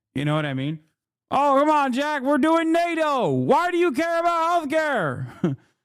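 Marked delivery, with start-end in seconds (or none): 1.3-5.6 smug, very high-pitched, slow and dragged out. Imagining a politician brushing off healthcare questions: Joe Biden impression. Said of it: "I could hear, like, Joe Biden saying that".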